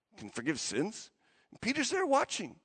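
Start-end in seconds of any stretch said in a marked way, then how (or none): 0.2-1.1 soft muttering under breath. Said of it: "People are muttering in the back".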